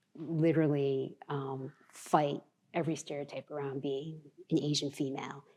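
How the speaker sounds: plain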